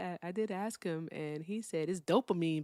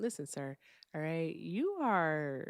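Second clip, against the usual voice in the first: mock overly polite delivery, quieter; 4 dB quieter than usual. Retelling what was said to an annoying man on the phone: retelling an extremely polite tone. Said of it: "I told him extremely politely".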